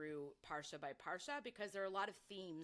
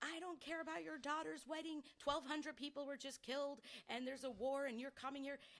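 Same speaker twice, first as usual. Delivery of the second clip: mock woman's voice, high, shrieking outburst; 9 semitones higher than usual. Retelling a woman in the front shrieking at a man collecting cash, imitating a woman shrieking. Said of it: "starts shrieking at him".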